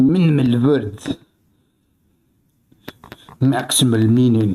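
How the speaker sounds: put-on caveman voice. Speaker with a headache decides to cut down on words, talking like a caveman. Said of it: "I'm gonna speak like a caveman".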